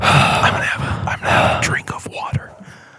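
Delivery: hushed asmr whisper, close to mic. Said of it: "we're slowly becoming more A S M R".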